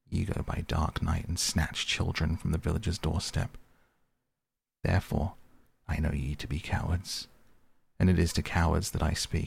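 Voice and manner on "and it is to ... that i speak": ordinary delivery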